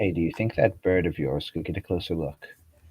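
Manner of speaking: under the breath. A player voicing their character sidling over to ask something, under the breath. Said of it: "low under my breath".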